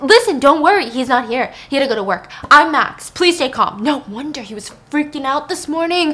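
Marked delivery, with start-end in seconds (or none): 0.0-3.8 loud, frantic, unhinged voice. Retelling a film scene, voicing a character on cocaine: frantic voice. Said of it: "it's the frantic voice".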